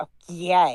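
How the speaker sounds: thick, cutting, deeply sarcastic tone. Reading chat logs aloud, acting out Sherry's reply: imitating Sherry, deeply sarcastic. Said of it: "I like to imagine that yay is so deeply sarcastic".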